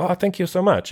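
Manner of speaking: high-pitched put-on Chinese accent. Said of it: "I put on an accent there".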